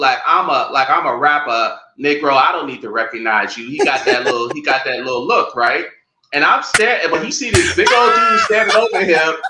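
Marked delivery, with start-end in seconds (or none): none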